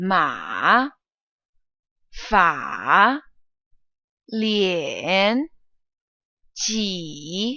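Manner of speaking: ma, fa, lian, ji each falling then rising. Reading third tone practice syllables aloud together with learners, mandarin third tone. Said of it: "let's read these third tone syllables together".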